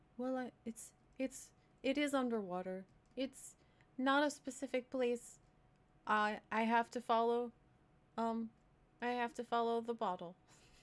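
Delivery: anxious, halting, tripping over the start. Voicing a character who explains he must follow the bottle: nervous. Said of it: "he seems kind of nervous to tell you".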